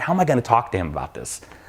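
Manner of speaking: ordinary talk, nothing marked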